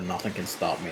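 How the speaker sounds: normal talking voice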